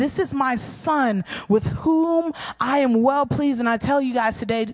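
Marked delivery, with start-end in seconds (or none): 0.0-3.6 slow, drawn-out, proclaiming godlike voice. Retelling God speaking at Jesus' baptism: imitating a loud booming voice. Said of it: "with a loud, booming voice".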